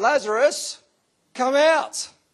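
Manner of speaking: shrill, ringing, very loud high shout at full voice. Speaker retelling the raising of Lazarus, acting out a very loud call. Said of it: "in a very loud voice".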